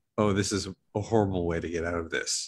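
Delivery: ordinary talk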